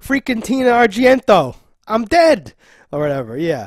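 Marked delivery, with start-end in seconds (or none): 0.0-2.5 put-on loud, slow, heavy New York accent. Describing a guy as a mook: Jersey Shore New York accent. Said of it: "Jersey Shore, New York, whatever accent guy".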